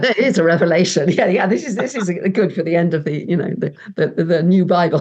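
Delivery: words broken up by laughing. Joking about a doomsday scenario, laughing while talking. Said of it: "sorry, I must stop laughing".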